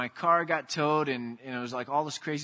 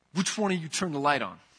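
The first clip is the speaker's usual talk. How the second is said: sharp, demanding, barked yell. Retelling a moment of yelling at the three kids: imitating his own yell. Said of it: "I yelled at my three kids".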